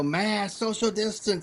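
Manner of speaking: mock confrontational shouting. Retelling how people ran up and confronted someone: imitating someone yelling. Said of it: "started yelling".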